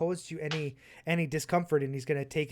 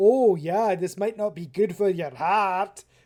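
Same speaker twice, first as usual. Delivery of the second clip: very loud, ridiculous mocking voice; 4 semitones higher, 9 dB louder than usual. Quoting how the other speaker covered in a conversation, as a mocking impression of the listener. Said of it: "my impression of you sounding ridiculous".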